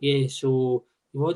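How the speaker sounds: low, slow, drawn-out, sluggish low-energy voice. Imitating a low-energy listener: imitating a lower, slower voice. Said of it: "your voice is a bit lower and slower".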